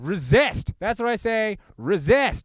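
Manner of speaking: very high, fired-up, heated yell. Urging people to resist, yelling in public. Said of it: "I'm yelling. I'm yelling in public".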